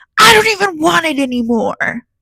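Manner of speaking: mock screaming, high-pitched. Recounting offering a man a leftover omelet, imitating him screaming. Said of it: "He crosses his arms and screams at me".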